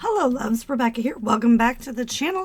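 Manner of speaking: froggy, rough voice. Welcoming viewers back to the channel: froggy voice. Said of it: "I'm going a little froggy".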